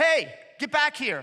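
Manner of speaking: loud, slow, yelled call.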